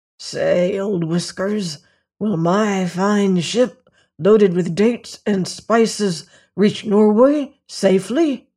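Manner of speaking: hoarse, husky, secretive confiding voice. Man with his mouth close to a cat's ear asks it a question: hoarse voice. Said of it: "in a hoarse voice he asked".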